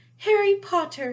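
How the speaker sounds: very high-pitched, shrill, carrying creature voice at full volume. Reading a story aloud, a creature greeting Harry, in Dobby's high-pitched voice. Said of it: "said the creature in a high-pitched voice".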